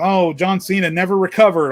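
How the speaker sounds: play-acted, heavy, dry, ironic sarcastic delivery. Quoting a line from own recent video: imitating own sarcastic remark. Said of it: "obviously being sarcastic".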